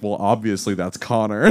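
put-on under-breath mutter. Retell James's reaction to the group's kissing pick, imitating someone speaking under his breath. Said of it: "you just hear James under his breath and go".

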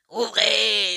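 very loud, raging, furious howled yell. Reading a tale, voice the hungry wolf at the door, shouted.

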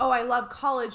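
ordinary talk

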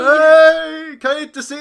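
put-on shouting voice. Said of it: "Måste prata så här!".

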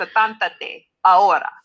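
very loud, authoritative, commanding delivery. Showing the spanish phrase used at work with a child: said with authority. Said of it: "let me say this with authority".

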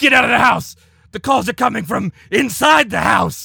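very loud, very high, raw, frantic, shrill, rushed shout. Retelling the police warning to the babysitter: imitating a frantic police warning. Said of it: "He actually says".

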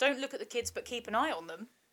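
plain

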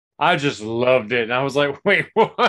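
normal talking voice

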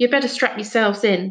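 ordinary delivery

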